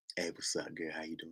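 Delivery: low, murmured, very quiet, barely audible voice. Retelling how a man walked up to a woman: imitating a man talking low. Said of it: "I'm speaking too low?".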